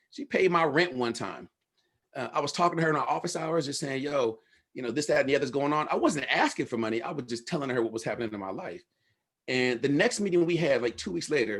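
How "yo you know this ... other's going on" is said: plain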